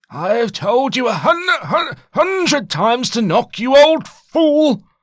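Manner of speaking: stuttering with rage. Narrated scene, a character bursts through the door at an old man, stuttering with rage. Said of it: "Ive stuttered with rage".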